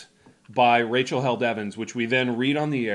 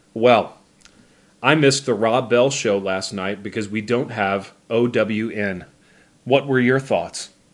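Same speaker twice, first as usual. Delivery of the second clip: flat deadpan reading without inflection; 5 dB louder than usual. Reading a tweet aloud without commentary, deadpan, no inflection. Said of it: "read completely deadpan without inflection or commentary".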